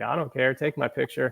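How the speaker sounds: ordinary talk, nothing marked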